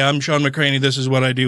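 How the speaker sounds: ordinary talk, nothing marked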